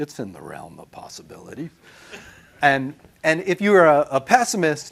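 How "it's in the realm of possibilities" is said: calm, very low and quiet. Acting out how Philip answered when everyone looked to him at lab meeting, imitating Philip's calm, low voice. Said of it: "He would just calmly say".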